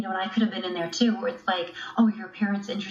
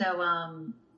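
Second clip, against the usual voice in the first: usual speaking voice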